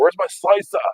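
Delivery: put-on very high shout in a German accent. In the garage, speaker recalls calling for his knife: retelling a German-accent yell. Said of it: "And I'm yelling it like I'm German".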